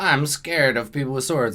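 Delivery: ordinary delivery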